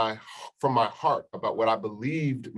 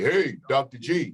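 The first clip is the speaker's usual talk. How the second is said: put-on light call across a room; 3 semitones higher than usual. Retelling a tall brother calling out behind you as officers walked you out, loud booming call. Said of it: "loud booming voice behind me".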